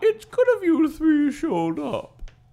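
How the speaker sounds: very high, loud voice, pitch swooping around. Reading the mom's lines aloud from the book: Julia Child voice. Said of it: "I'm trying to do Gloria Child".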